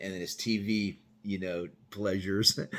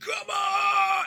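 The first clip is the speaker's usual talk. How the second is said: put-on, very high, stretched-out scream. Retelling someone in a cell screaming at cops: imitating someone screaming. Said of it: "And he's screaming".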